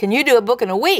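mock direct, blunt, emphatic, no-nonsense voice. Retelling a phone call from Lester Sumrall: loud Lester Sumrall voice. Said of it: "this loud voice says".

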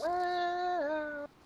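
high-pitched, hushed, creepy voice. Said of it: "That sounded creepy".

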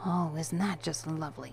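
mumbled under the breath. The narrator answers a giggling woman's teasing: muttered. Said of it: "I muttered".

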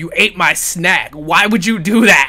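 loud, put-on angry, accusing voice. Voicing a toy figure who looks angry about an eaten snack: put-on angry Freddy voice. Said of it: "he looks like he's angry you ate his snack".

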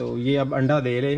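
ordinary talk

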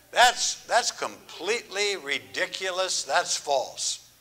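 normal talking voice

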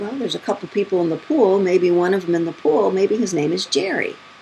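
plain

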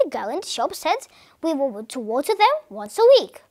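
plain reading voice

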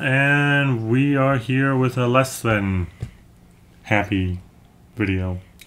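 hesitant, slow, halting and drawn-out delivery. Opening the StoryFNDM video with a co-host, slowing down a lot. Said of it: "you slowed down a lot".

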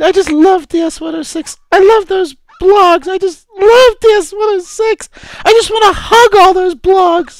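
crying, tearful, words pushed out through tears. Playing a recently employed ed tech who loves DS106; crying. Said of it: "Sorry, I'm crying".

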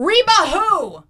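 slow, high-pitched yelling. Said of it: "Ronnie yells in her face".

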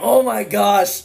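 slow, loud, teary gasp in a coughing fit. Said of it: "I'm crying now".

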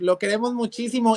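ordinary delivery

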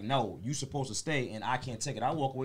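ordinary talk

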